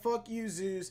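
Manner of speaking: ordinary talk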